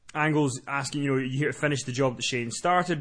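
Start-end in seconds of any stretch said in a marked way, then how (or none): none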